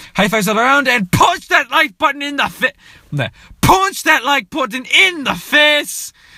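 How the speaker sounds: put-on Irish accent, very high and loud. Talking about an Irish YouTuber, try your best Jacksepticeye Irish accent. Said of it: "let me try to do my best Irish accent".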